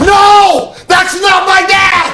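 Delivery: very high, forceful yell. Showing children how to scare off a stranger: forceful shout. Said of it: "And mean it, because then you're gonna scare this guy".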